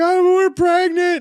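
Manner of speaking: sobbing, very high, very loud crying wail. Retelling the wife's pregnancy news: imitating someone crying. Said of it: "And then she's crying".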